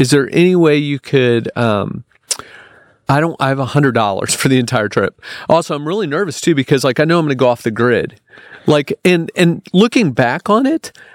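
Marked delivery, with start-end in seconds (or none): none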